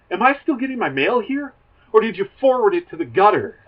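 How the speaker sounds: pissed-off rant. Retelling a sitcom scene where a character complains: imitating an angry rant. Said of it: "all pissed, he's like".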